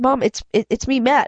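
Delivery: ordinary delivery, nothing marked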